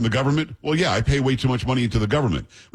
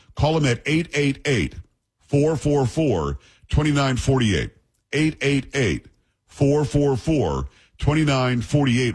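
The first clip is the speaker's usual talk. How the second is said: slow, deliberate delivery, each digit said separately. Giving listeners a phone number to call: speaking slowly. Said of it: "I'll say it slowly".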